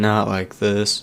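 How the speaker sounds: flat, toneless, level monotone delivery. Quoting a dying woman's last words to another speaker, in a flat monotone. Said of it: "Like in that monotone".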